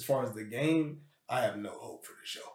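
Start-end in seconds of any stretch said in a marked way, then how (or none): 1.3-2.4 quick, fast whisper in a superhero voice. Speaker sharing his opinion with a co-host, dropping into a Batman voice. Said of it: "He pulled out his Batman voice".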